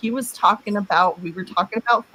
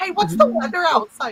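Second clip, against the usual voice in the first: put-on very high, frantic blurted shout; 10 semitones higher than usual. Retelling the question she yelled to mask a noise, retelling a frantic, loud question. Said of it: "Just something frantic and loud".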